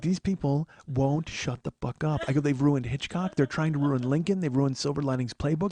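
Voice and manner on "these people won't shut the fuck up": voice dropped slightly, hushed and low. Speaker retells complaining to Karen about people nearby, in a lowered voice. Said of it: "so I lower my voice a little".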